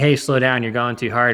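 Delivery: ordinary delivery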